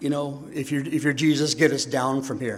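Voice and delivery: ordinary talk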